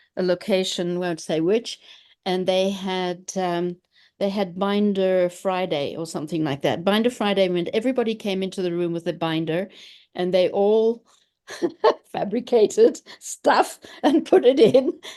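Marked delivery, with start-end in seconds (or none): 12.1-15.0 slow delivery while laughing. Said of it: "I'm laughing because".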